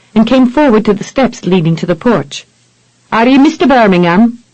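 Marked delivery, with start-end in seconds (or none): 3.1-4.4 Irish brogue, questioning tone. Reading a story aloud, a stranger asks at the porch: irish brogue. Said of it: "asked with an Irish-infected brogue".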